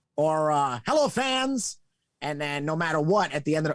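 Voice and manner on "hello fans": put-on very high, vintage old-school stadium announcer voice. Retelling how announcers always opened back in the day: old-school announcer voice. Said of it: "back in the day, it was always".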